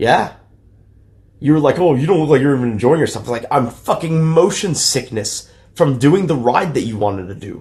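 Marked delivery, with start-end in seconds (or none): 1.8-3.2 irritated, annoyed, accusing, fault-finding tone. Retelling what the other speaker said at Disney: imitating someone getting mad. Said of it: "getting mad at me".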